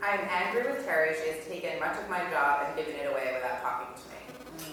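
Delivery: normal talking voice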